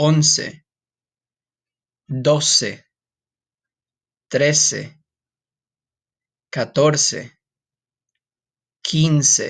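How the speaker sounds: very slow, careful, word-by-word delivery. Counting in Spanish for listeners to repeat after: slow counting. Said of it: "I'm going to say them slow".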